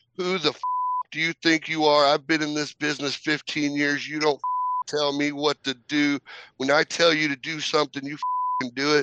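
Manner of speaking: put-on angry wrestler yell, barked but held back. Retelling how a wrestler yelled at him backstage: imitating Hurricane yelling. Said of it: "he starts yelling at me".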